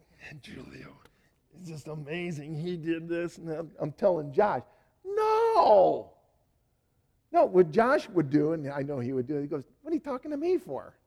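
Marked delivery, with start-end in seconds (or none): 9.9-10.9 high, quick, rattled-off cartoon rabbit voice. Retelling what Josh would say when spoken to, Bugs Bunny accent. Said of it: "With a Bugs Bunny accent".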